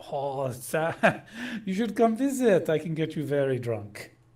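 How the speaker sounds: attempted put-on French accent. Playing the Frenchman answering a greeting, in a French accent. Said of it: "let's see if I can do the uh, French accent".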